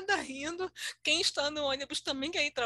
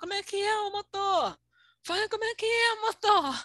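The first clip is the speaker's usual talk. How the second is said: put-on high-pitched shouted yelling; 6 semitones higher, 4 dB louder than usual. Telling how the bus waited for her, voicing the passengers: retelling the passengers' shouting. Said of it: "os passageiros gritando".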